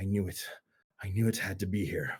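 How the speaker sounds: stage whisper, as if to himself. A game master voices a character half-whispering to himself under his breath. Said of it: "under his breath whisper to himself".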